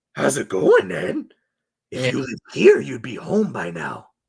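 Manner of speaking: eerie, over-eager, resonant delivery, creepy, bright and swooping. Quoting a favorite horror movie line: creepy excited Pennywise impression. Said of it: "so resonating and creepy with that".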